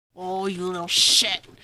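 put-on low, growled old hag voice. A game master voices a hag whose spell was just countered, growling. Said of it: "she just growls".

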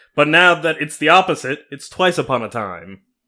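ordinary delivery

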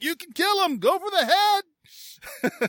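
high, loud scream.

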